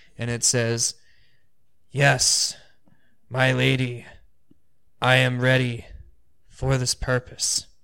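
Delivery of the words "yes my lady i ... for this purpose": slow voice seeming to come from all directions. A storyteller voices an answer to the lady, in a voice from all directions. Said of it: "this voice that sounds like it's coming from all directions".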